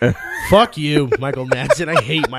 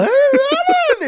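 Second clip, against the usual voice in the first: sudden shift up to very high pitch; 4 dB louder than usual. Showing how a voice suddenly changes: Jeff Bridges impression. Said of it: "You know how Jeff Bridges will sometimes talk like this".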